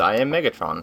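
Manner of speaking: ordinary talk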